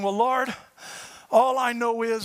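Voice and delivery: mock crying, slow, tearful, prayer-like delivery. Retelling a morning prayer to the Lord: retelling own crying prayer. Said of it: "and I'm crying".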